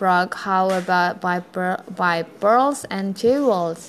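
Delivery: ordinary delivery, nothing marked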